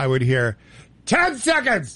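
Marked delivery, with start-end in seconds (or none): 1.1-2.0 very high, full-throated, full-voiced call. Recalling a man giving timing cues into the speaker's ear: full voice. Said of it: "full voice".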